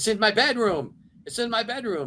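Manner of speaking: put-on, very high, frantic shrieking scream. Retelling what Paul told him, imitating Paul screaming. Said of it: "was screaming, screaming at me".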